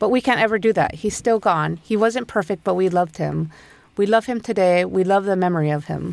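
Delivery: ordinary talk, nothing marked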